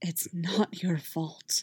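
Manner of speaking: barely-there, soft, close, hushed half-whisper. Narrator voicing Kanan as he holds a weeping Ezra, half-whisper. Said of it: "Kanan whispered".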